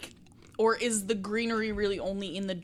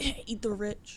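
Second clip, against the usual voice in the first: low-key muttering under the breath. Playing a character muttering a remark in a shop: muttering under breath. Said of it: "low-key under my breath be like".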